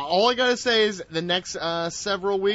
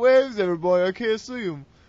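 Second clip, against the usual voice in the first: odd, put-on, Australian-sounding accent; 3 semitones higher than usual. Imitating someone squinting without her glasses: imitating Toni Storm's accent. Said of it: "Why does she have that accent?".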